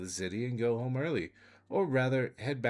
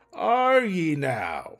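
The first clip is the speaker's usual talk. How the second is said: very loud, pitched-up dwarf voice; 5 semitones higher, 10 dB louder than usual. Game master voicing the dwarf, who repeats his question, repeated louder. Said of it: "He repeats louder".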